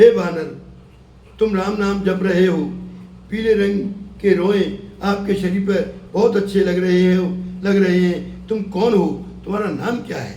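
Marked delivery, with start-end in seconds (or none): none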